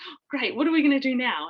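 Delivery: mock thrilled, eager, excited and high-pitched. Retelling how someone reacted to the waters breaking: imitating someone excited. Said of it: "so excited".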